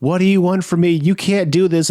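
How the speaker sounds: put-on frightened pleading voice. Retelling a story where she wakes up tied, facing him, imitating a frightened captive. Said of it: "And she's like".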